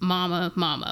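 ordinary delivery

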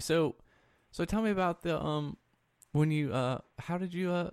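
put-on therapist voice. Questioning a friend about drug use, treating him as a patient: fake voice used with patients. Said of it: "This is the fake voice you use with your patients".

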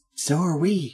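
hushed voice. In a scene, a character answering a companion, hushed tone. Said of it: "in a hushed tone".

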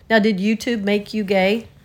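ordinary talk

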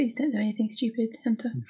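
very quiet, barely audible mumble under breath. In a roleplay scene, Constance speaks to Hunter, mumbling under her breath. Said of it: "Constance mumbles that under her breath".

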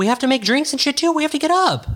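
squeaky, very high-pitched flustered voice. Talking with someone about taking tequila shots, in a high-pitched voice. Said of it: "Why is your voice so high?".

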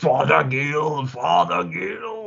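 very slow, rough, creaky, dragged-out demon voice. Speaker recalls voicing the demon Abaddon in their movie: Abaddon demon voice. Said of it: "So I'm Abaddon through the whole movie".

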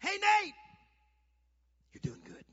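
very loud, high, shrill cheering scream. Retelling calling out from the stands during games: imitating his own scream. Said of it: "I'd scream out".

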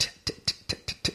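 soft, crisp whispered asmr tit sounds. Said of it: "words are whispered and pronounced".

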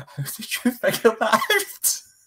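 mock laughing, very high-pitched and drawn out. Retelling reacting to a throwaway movie line, retelling bursting out laughing. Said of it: "And I burst out laughing".

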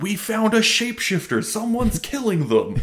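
acted-out, all-out shout at full voice, very high. Retelling how Walter bursts in with news: imitating Walter shouting loudly. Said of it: "shouts as loud as he can".

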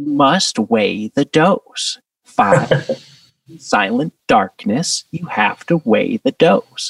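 distinctive rhythmic cadence. Imitating a man with a particular cadence and rhythm: Terence McKenna impression. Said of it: "That's a really good Terrence McKenna".

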